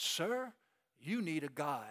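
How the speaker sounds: put-on posh British accent, Queen's English. Telling a story, voicing a native addressing the man, refined Queen's English. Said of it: "with the finest Queen's English".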